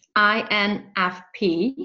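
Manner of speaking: very slow, drawn out letter by letter. Repeating a term after being asked to say it slower: said slower. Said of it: "just to say it a little bit slower".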